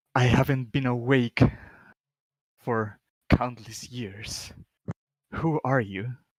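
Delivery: echoing, ghostly voice from the other side. Game master voicing a ghostly manifestation in front of the players, echoey ghostly voice. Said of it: "You hear this echoey vo- voice".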